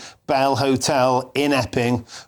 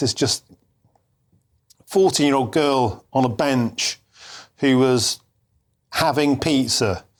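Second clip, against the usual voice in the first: emotional, moved, halting, stop-start phrasing. Reacting on air to a guilty verdict in a court case: emotional. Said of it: "I get very emotional about things like this".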